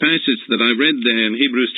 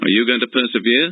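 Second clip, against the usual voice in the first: ordinary talk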